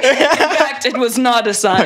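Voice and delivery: high-pitched, laughing narrator voiceover.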